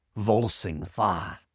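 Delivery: slow, deep, vibrating rumble.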